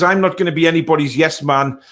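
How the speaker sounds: ordinary delivery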